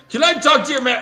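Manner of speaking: very high, shrill, angry, high-pitched yell. Acting out a person who starts yelling: imitating someone yelling. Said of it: "And he starts yelling".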